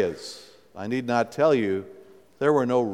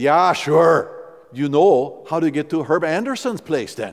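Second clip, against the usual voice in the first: put-on rural Midwestern Wisconsin accent with Norwegian flavor; 4 semitones higher, 4 dB louder than usual. Retelling asking a local man for directions, the speaker quotes his reply: rural Wisconsin Norwegian accent. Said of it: "in the best Norwegian brogue of rural Midwestern Wisconsin".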